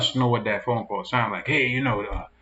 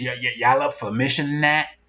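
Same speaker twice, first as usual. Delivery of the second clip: thick southern drawl, laid on as much as possible. Retelling a man in Mississippi rounding up his boys, heavy southern drawl. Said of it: "put the southern drawl on it as much as possible".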